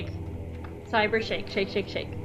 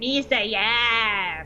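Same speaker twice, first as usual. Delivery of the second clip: slow, odd, gloating put-on character voice. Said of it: "he's just like".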